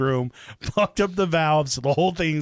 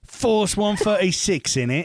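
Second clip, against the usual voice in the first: put-on British accent, pitched much higher; 5 semitones higher than usual. Told to repeat the unit's name in an Indian accent, saying it in a British accent. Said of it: "you can be Indian and also have a British accent".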